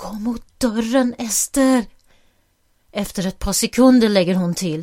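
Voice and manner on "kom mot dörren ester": whispered pleading tone, slower. Mia tells Ester to come to the door without being heard; pleading in a whisper. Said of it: "Mia bönar med viskande röst".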